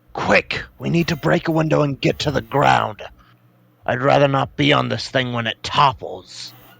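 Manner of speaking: hushed, quiet, softly spoken delivery. During a tabletop game, a player speaks in character to the group, said quietly. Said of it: "I'm gonna quietly say".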